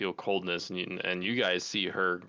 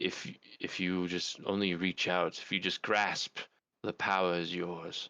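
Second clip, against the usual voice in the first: soft, hushed whisper. Game narrator voicing a staff that speaks to a player, whispering. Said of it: "you can hear whispers of it like saying".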